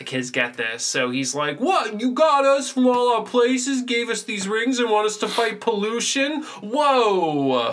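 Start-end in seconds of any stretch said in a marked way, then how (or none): 1.6-7.7 put-on heavy Brooklyn accent, stretched "whoa". Acting out Wheeler's reaction to the kids' mission, in Wheeler's Brooklyn accent. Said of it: "Wheeler with this stupid Brooklyn accent".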